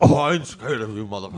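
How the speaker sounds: loud voice with puffed-out jowls. Trying a jowly Bernie Sanders as Bernie Mac: too much like Nixon. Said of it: "that's too Nixon".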